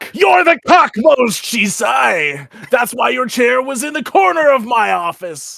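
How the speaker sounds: unconvincing anime villain voice, very high, very loud, shrill. Taunting a rival in character in a game scene: bad anime villain voice. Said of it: "You sound like an anime villain and not a good one".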